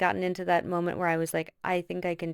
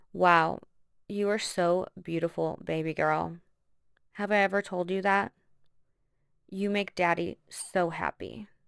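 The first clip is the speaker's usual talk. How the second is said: acted-out, most disgusting, gross voice imaginable. Retelling what a man said while squeezing her cheeks, imitating his disgusting tone. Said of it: "in the most disgusting fucking tone of voice".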